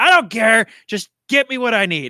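stubborn, insistent, high-pitched shouting. Voicing an NPC arguing with the bartender: NPC yelling. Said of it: "You can hear him yelling".

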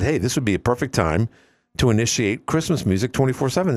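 normal talking voice

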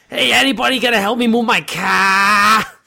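over-the-top Boston accent, laid on, drawn-out "car". Imagining going down to South Boston and hamming it up: exaggerated Boston accent. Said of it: "just like exaggerate".

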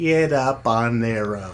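ordinary talk, nothing marked

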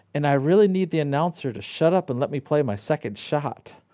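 normal talking voice

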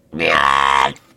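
very loud, startled, drawn-out monster shriek. Game narrator voices the creature reacting to the warning shot: screeching creature. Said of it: "screeches like".

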